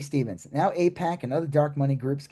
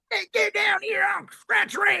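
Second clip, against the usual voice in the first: mocking put-on hillbilly voice, higher. Describing actors on a show: imitating a TV hick character voice. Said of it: "that's the character".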